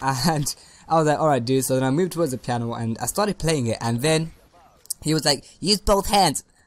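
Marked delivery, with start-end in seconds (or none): 5.6-6.4 eerie, unsettling, creepy high-pitched voice. Recalling a teacher sitting right beside them at the piano: imitating creepy high-pitched teacher. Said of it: "creepy freaking high-pitched voice".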